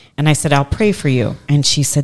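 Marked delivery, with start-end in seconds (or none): none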